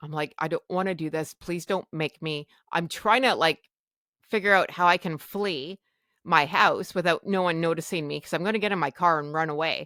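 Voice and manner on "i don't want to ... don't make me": put-on tearful bawling, quieter. Retelling begging not to be taken to the hospital: imitating own past bawling. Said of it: "I'm still bawling".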